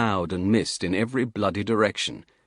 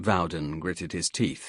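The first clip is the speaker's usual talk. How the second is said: ordinary delivery, nothing marked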